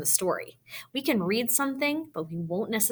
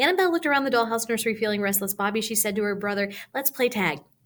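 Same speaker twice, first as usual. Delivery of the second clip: rushed, much too fast reading; 3 semitones higher, 3 dB louder than usual. Showing what reading a story aloud too fast sounds like: reading much too fast. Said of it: "what it looks like when I try to read too fast".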